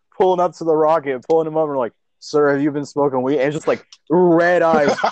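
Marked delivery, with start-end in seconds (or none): 2.2-3.4 fast, clipped police officer voice. Imagining a space cop pulling over a rocket: police officer questioning. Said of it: "like a police officer in space".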